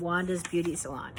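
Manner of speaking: usual speaking voice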